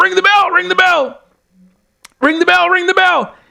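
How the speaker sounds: insistent, fast, repeated yelling. Retelling how a man started yelling at the ref, retelling a yell. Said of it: "starts yelling at the ref".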